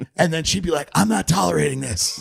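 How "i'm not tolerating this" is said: raspy, guttural voice from the throat. Retelling a press conference answer to a reasonable question: imitating Lori Lightfoot's raspy guttural voice. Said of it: "raspy, guttural voice".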